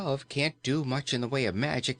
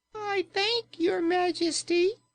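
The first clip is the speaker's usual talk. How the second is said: very high, tiny, squeaky toy voice. Reading a story aloud, voicing the Pink Bear in a squeaky voice. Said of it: "it said in a squeaky voice".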